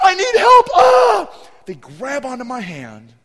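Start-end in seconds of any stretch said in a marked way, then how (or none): 0.0-1.5 put-on panicked scream, higher and louder. Retelling how two kids lost it in the dark: imitating kids screaming. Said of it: "These two kids are screaming".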